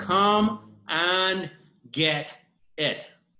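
very slow, careful, deliberate, word-by-word delivery. Saying an English phrase slowly so listeners can follow: spoken slowly. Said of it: "voy a decir despacio".

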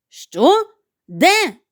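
sudden, high, startled shout. The captain, hearing the lookout's cry from the masthead, calls back, shouted. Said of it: "закричав Гак".

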